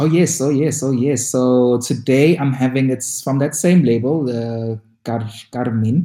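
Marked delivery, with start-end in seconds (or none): 4.2-6.1 slight Afrikaans-like accent. Naming the drink's label while describing it, saying it with an accent. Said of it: "I don't know why I'm saying it with an accent".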